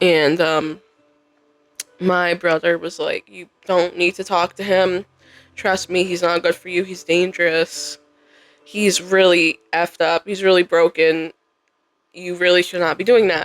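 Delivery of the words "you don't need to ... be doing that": ordinary talk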